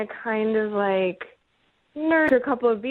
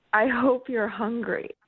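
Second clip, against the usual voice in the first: whispered. Telling friends what a man whispered to the speaker: retelling a whisper. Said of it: "he just whispered to me".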